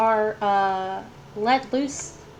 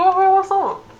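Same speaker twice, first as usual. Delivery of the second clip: very high, loud, garbled through a full mouth; 9 semitones higher, 10 dB louder than usual. Narrating a role-play scene, he voices a character greeting you, talking with mouth full. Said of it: "but his mouth is full, so he's like".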